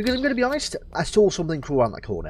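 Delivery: ordinary delivery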